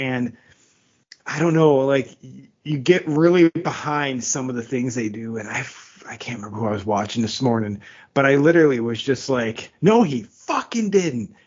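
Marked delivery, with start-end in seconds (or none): 9.8-11.3 mock drawn-out, pitched-up yell. Retelling a reaction while watching junior hockey on TV, imitating own shouting. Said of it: "hears me yelling at the T V".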